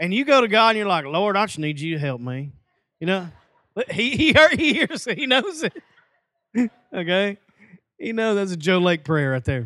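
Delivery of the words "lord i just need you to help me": put-on country accent. Speaker imitating a country person praying to God, country accent. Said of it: "Some of you are just country".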